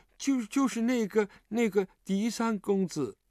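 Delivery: scared, hesitant tone. A narrator reads a frightened man's answer to his questioner, timidly. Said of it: "胆怯地说".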